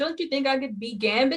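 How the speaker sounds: bad Cajun accent drifting toward Jamaican. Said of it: "you sound Jamaican, so I don't think you can do a Cajun accent".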